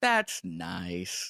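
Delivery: heavily sarcastic, drawn-out "nice". Showing how intonation changes the meaning of that's nice: heavily sarcastic. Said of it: "Heavily sarcastic".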